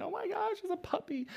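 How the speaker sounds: very high, teary, crying outburst. Retelling the wife's reaction to a Christmas puppy: imitating Lindsay crying. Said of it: "she's, like, crying".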